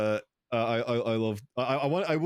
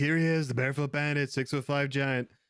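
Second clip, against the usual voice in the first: nasal, hyped-up stage introducer voice; 3 semitones higher than usual. Imitating a candidate bringing a guest on stage: Trump impression. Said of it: "you do such a good Trump impression".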